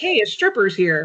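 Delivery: normal talking voice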